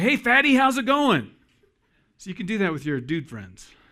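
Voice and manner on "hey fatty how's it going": high, loud, rowdy, pally holler. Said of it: "give 'em a high five and say".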